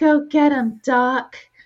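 high-pitched, slow, small, mousy voice. Describing a movie character, imitating Jenny in a mousy voice. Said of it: "more of a mousy sort of voice".

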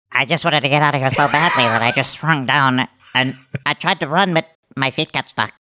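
little, wee, small, tiny voice. Asked to hear the small voice, the speaker answers in a small voice. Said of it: "let's hear the small voice".

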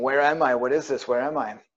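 frantic, desperate, terrified pleading cries. Recounting being lost in total blackness, retelling own begging and pleading. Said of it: "I just kept begging and pleading".

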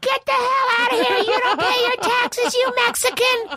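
mock very high, shrill, shrieking yell. Retelling a homeowner pulling a gun and screaming: imitating someone screaming.

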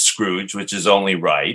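ordinary talk

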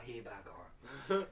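slow, soft, reverent tone. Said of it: "They bow when they say".

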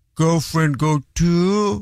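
mock forlorn, sad, pleading tone. Retelling how a girlfriend reacted when told no, imitating a sad plea. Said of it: "she would put on a sad face and say".

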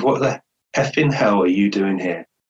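put-on whisper. Retelling a man in intensive care repeating himself: imitating a whisper. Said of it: "he whispered it again".

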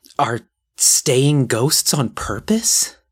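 eager, thrilled tone. A narrator reads a character's question, in hushed excitement. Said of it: "Ruth's voice was all hushed excitement".

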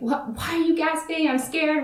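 put-on cross, indignant, angry, high-pitched outburst. Retelling a sister's reaction to being startled by a gasp: imitating an angry sister. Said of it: "so angry at me".

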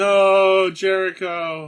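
loud, slow, drawn-out, dismayed, anguished yell.

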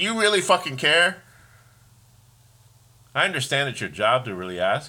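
irritated, high, mad-sounding tone. Complaining about cashiers who ask about your day, sounding mad. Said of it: "I sound like I'm mad".

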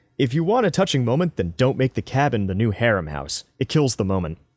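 ordinary talk

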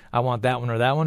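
normal talking voice

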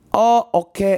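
bad fake English accent. Imitating a man the speaker talked with, in a bad English accent. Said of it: "No, that's not English".

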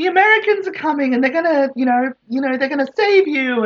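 mock hype, high, fast and excited.

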